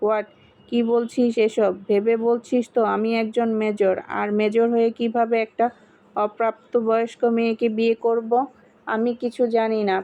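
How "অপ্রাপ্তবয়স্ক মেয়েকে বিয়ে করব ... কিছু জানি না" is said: ordinary delivery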